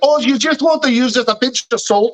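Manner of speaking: mock Scottish man accent. Speaker recounts a Scottish guy's shortbread video on YouTube, put-on Scottish accent. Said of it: "crazy Scottish guy on TV".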